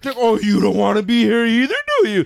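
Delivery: sarcastic, sneering, high and swooping. Retelling what a man said to her while she was reading, imitating a sarcastic tone. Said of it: "his tone was totally sarcastic".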